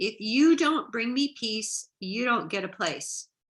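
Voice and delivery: put-on big, booming voice. Retelling a message heard as a voice in the head on the beach, booming voice. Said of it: "It was like a booming voice".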